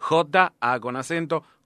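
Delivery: slow spelling, letter by letter. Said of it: "Vamos a deletrearlo".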